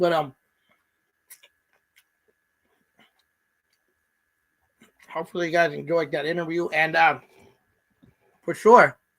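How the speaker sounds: talking with mouth full of food. Wrapping up after an interview, talking with mouth full. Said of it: "hard to talk with this peanut butter in my mouth".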